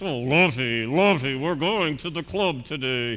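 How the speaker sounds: posh rich-man voice through clenched teeth. Recalling the rich man from an old TV show, speaker imitates him: Gilligan's Island rich man voice. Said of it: "hearing his voice with teeth clenched".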